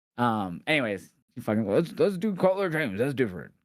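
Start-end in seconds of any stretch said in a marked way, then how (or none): 1.7-3.4 very high, put-on different voice. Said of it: "I gotta do the Sean voice".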